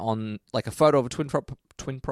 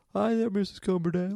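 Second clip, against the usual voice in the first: put-on very high, polite little kid voice; 10 semitones higher than usual. Quoting the kid's line from the episode, imitating the kid's voice. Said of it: "his voice is so good. Like".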